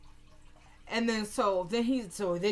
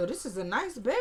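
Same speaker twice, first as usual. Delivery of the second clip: ordinary talk, nothing marked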